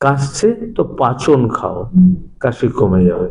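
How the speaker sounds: normal talking voice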